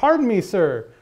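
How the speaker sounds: loud, high-pitched yell. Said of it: "he yelled down".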